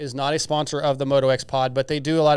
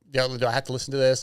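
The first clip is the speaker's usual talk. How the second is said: put-on frustrated voice. Retelling a rider's reaction to bikes revving nearby: imitating frustrated Chase. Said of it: "you can see him kinda getting frustrated".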